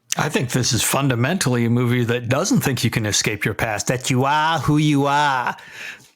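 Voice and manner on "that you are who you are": deliberately poor, bad Boston accent. Answering a question about the movie's thesis, in the worst Boston accent. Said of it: "in my worst Boston accent".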